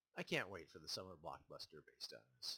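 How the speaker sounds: ordinary talk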